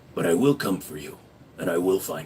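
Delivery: very deep, low action-hero voice. Answering a chat request to do the Taken movies guy's voice. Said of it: "Do the Taken movies guy's voice".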